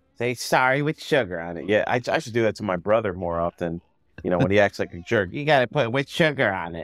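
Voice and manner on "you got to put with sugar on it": poorly done cartoon rabbit voice. Talking about a brother who acts like a jerk, a terrible Bugs Bunny impression. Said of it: "that's a terrible Bugs impression".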